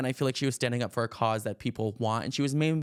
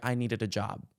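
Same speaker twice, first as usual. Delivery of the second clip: mock smug scolding tone. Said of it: "I'm scolding the camera kinda smug vibe".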